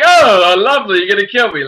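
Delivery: high, loud, mocking tone laughed through. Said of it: "he's just laughing because it's hysterical to him".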